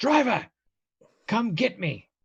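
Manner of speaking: high, drawn-out yelling call. Voicing a character calling to the carriage driver: yelling to the driver. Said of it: "he's gonna yell to the driver".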